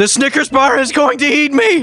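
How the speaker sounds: acted freak-out. Recounting a character who throws the desk over: acting out freaking out. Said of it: "like freaking out".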